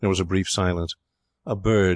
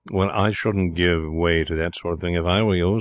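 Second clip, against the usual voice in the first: ordinary delivery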